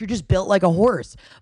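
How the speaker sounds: usual speaking voice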